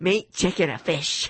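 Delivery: plain, simple, blunt voice. Asked to do the voice, retelling what she said, imitating her voice. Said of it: "Now you do the voice".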